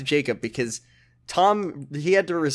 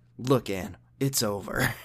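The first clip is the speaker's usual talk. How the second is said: put-on serious voice, lower and quieter; 4 semitones lower, 6 dB quieter than usual. Retelling a show scene where George speaks to Anne, imitating George's serious voice. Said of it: "serious voice ever".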